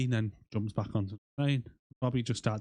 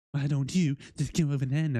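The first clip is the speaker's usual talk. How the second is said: put-on camp voice; 4 semitones higher than usual. Retelling a scene, quoting Bobby talking to the pilot, Bobby's camp voice. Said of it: "like bit of a camp voice".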